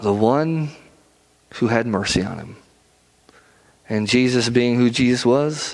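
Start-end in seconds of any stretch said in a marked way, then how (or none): 0.0-2.5 put-on embarrassed mumble under breath, lower. Retelling a Bible story, voicing the man's reply: imitating an embarrassed mutter under breath. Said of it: "under his breath, he would have said this".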